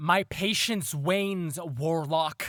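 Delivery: loud, booming, projected, played big. A character runs out of patience with the warlock, speaking loud. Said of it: "Loud says loudly".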